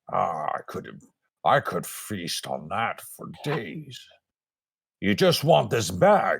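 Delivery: troll monster creature voice. A narrator voices a troll standing over a whimpering fallen man, troll voice. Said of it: "the troll is like".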